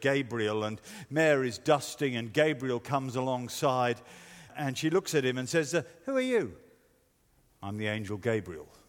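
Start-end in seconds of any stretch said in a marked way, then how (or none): 7.6-8.6 put-on flat deadpan voice, lower and quieter. Retelling a boy playing gabriel in a nativity play, imitating a deadpan flat voice. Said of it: "Deadpan expression, flat voice".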